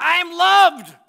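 shouting loudly. Pastor showing listeners what to say out loud to a mirror, in a loud shout. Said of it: "you're getting kind of loud".

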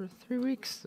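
voice breaking, squeaking way up, very high. Opening a quick update video, voice cracking. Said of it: "huge, huge voice crack".

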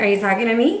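ordinary talk, nothing marked

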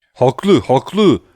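loud crowd of voices shouting all at once. A narrator reads the prisoners' response to Andrea, shouting. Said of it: "diye bağırıştı mahkumlar".

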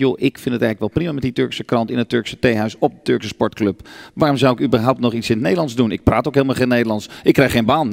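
ordinary delivery

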